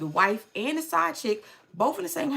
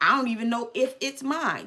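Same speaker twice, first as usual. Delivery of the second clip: acted, upset, frustrated, angry flipping-out rant. Retelling a movie scene where he flips out on the side chick: imitating someone flipping out. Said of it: "That's exactly how he was saying".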